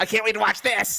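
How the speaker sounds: excited, high voice. Imitating another speaker's excitement about watching wrestling: imitating excited voice. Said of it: "straight up excited for it".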